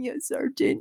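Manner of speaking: put-on small timid voice. Retelling answering instructors as a shy trainee: imitating her own small timid voice. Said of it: "this little".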